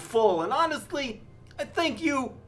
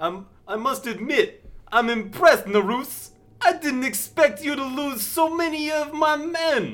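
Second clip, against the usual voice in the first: put-on Brooklyn-Boston accent mix; 3 semitones higher than usual. Playing a character addressing Narus in a roleplay: Brooklyn-Boston accent. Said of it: "has a Brooklyn slash Boston accent".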